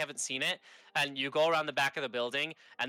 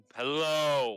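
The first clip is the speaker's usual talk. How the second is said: big, ambient, amplified booming voice; 4 dB louder than usual. Showing how a voice sounds through the device: big, ambient projected voice. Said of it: "it's really big and ambient".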